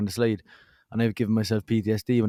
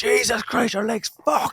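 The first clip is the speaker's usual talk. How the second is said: very high, shrill shout; 13 semitones higher, 3 dB louder than usual. Recounting finding a man with a broken leg, speaker retells his own shout. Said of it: "we were both just shouting at each other".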